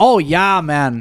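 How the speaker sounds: put-on laid-on upper Midwest Wisconsin accent. Retelling how a man from Wisconsin talks in every sentence: Wisconsin accent impression. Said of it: "every sentence would be".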